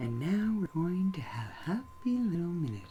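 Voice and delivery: calm, soft, relaxed voice. Showing a co-speaker how Bob Ross talked, in a calm Bob Ross voice. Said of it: "And this is how Bob Ross talked".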